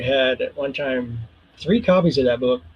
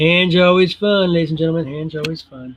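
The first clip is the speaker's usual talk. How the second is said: sarcastic, ironic fake enthusiasm and cheer; 3 semitones higher than usual. Starting to draw the hands while talking to viewers: sarcastic. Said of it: "I am being sarcastic".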